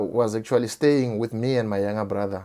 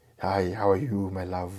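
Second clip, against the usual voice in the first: deep, fatherly voice; 4 semitones lower, 6 dB quieter than usual. Retelling the first words heard from a visitor: imitating a deep voice. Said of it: "I just heard this deep voice".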